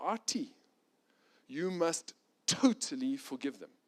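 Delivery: put-on Romanian accent. Retelling what a friend said to Artie, the speaker uses Yusuf's Romanian accent. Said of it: "in his Romanian accent".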